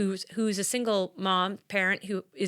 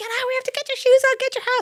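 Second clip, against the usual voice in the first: very high, loud, hurried shouting; 7 dB louder than usual. Retelling a hard morning with four kids, imitating her own shouting. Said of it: "But I was like".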